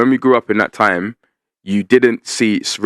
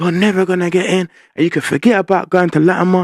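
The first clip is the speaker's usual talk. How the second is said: imitated shout, pitched higher; 10 semitones higher than usual. Retelling what a teacher shouted at them as a kid: imitating a teacher shouting. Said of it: "She started shouting".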